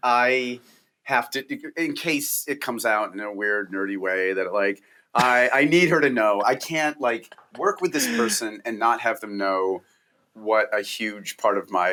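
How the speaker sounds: plain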